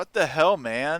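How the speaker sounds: very loud, high, startled, shocked scream. Reacting in character after being slashed by a goblin: screaming. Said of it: "I'm just gonna scream".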